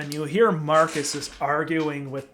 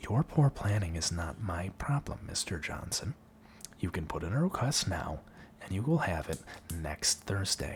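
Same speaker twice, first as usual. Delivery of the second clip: very quiet, hushed, soft ASMR librarian voice; 8 semitones lower, 9 dB quieter than usual. Answering Mister Johnson's demand for a tome, a librarian speaks in a soft librarian ASMR voice. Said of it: "in her soft librarian A S M R voice".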